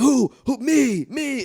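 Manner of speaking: acted, very high, very slow, drawn-out shrieking. Retelling how a celebrity asked a crowd who gives to the poor: imitating someone screaming.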